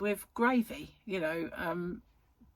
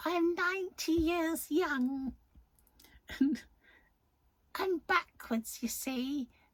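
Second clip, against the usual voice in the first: put-on high, elderly little old lady voice; 8 semitones higher than usual. Quoting what a little old lady used to say: Missus Wilkins voice. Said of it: "That's what she used to say".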